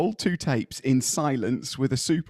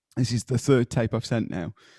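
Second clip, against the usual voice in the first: usual speaking voice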